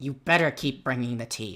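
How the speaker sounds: harsh, bossy, threatening tone. Explaining how the tea scene goes, the speaker acts out a harsh voice. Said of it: "you hear a more harsh voice".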